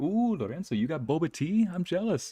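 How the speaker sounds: mock voice, high, teasing and jealous.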